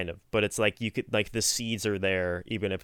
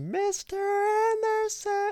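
mock shrieking scream, very high and piercing; 3 dB louder than usual. Describing a character waking up in a scene, retelling a scream. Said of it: "and then he screams".

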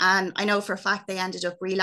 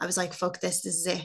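ordinary talk

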